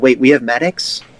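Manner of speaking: ordinary delivery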